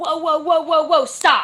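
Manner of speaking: very loud, high, halting shout. Retelling how a receptionist greeted them: imitating a loud shout. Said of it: "Like, really loud".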